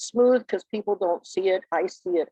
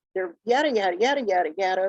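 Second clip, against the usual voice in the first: put-on quick-fire, rattled-off young-sounding rapid chatter. Imitating a young person who talks fast; very fast speech. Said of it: "A young person ... may speak quickly".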